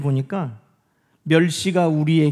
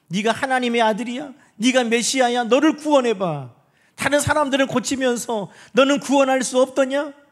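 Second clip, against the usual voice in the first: higher, pitched-up mocking jeer. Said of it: "예수님을 조롱했다는".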